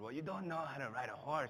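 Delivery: put-on Russian-accented speech. Telling a story, the speaker quotes people he met on a train: Russian accent. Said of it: "why am I speaking in this accent".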